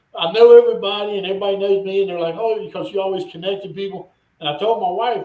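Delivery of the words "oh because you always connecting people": ordinary talk, nothing marked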